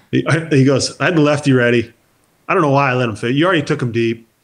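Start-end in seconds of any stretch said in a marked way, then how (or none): 1.0-4.1 dead straight, flat delivery with no emotion. Retelling what the manager said at the batting cage: imitating Jim Leyland, deadpan. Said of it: "dead, straight face, no emotion whatsoever".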